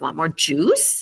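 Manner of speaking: pitch rises on the word "juice". Showing how to focus on juice when speaking: rising intonation on juice. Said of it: "you kind of raise your intonation at the end like it's a question".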